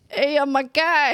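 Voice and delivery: put-on loud, high, belted-out Brooklyn accent. After asking whether Edgar has a Brooklyn accent, a player tries Edgar's Brooklyn accent. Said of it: "I can't do a Brooklyn accent".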